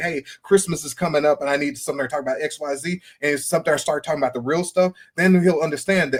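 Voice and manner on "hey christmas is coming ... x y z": ordinary talk, nothing marked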